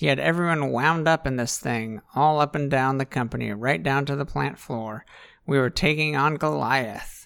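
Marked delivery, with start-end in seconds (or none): none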